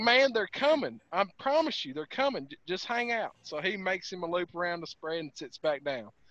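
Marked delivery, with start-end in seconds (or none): none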